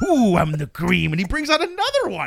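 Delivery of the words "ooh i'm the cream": loud, belted-out wrestler promo voice. Retelling a wrestling promo, quoting the wrestler: Macho Man impression. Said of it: "Macho Man".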